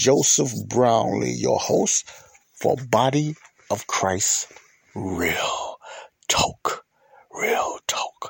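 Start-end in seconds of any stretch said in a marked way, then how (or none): 7.3-8.3 put-on mysterious-sounding voice. Host introducing his show, in his mysterious voice. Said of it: "my mysterious voice".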